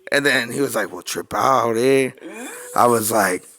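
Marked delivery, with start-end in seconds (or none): 0.9-2.1 put-on Southern California street accent, pitched lower.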